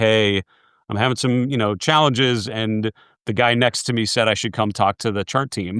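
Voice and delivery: ordinary talk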